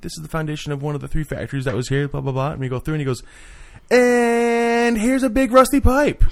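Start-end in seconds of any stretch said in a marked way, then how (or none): 3.9-6.2 squeaky, very high, slow, drawn-out cartoon voice. Retelling what a guide said walking them past factory foundations: South Park voice. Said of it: "he had like the South Park voice".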